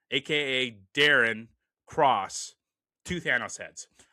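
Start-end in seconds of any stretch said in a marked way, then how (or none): none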